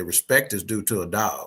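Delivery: ordinary talk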